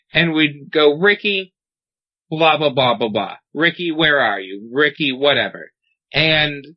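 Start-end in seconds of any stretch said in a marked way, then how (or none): none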